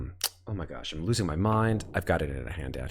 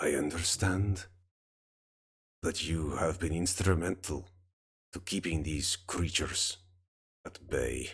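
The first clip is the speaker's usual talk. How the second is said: gravelly, halting, rough commanding voice; 4 dB quieter than usual. Voicing a woman who addresses the listeners, in a gravelly voice. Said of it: "in a sort of gravelly voice".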